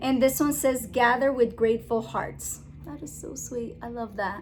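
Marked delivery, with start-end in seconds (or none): none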